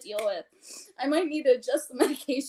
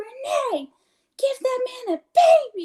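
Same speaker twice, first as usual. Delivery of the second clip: loud, drawn-out yelling; 10 semitones higher, 6 dB louder than usual. Retelling what people down the cubicles would yell: imitating people yelling. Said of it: "they would yell at me".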